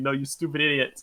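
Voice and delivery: normal talking voice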